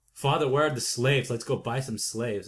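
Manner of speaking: ordinary delivery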